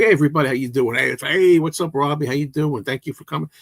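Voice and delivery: high-energy, pumped-up, lively, adrenaline-fueled voice. Demonstrating an upbeat way to open a video, the speaker greets viewers with an energetic greeting. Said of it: "You get a little more adrenaline".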